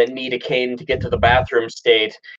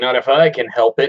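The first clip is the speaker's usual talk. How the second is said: plain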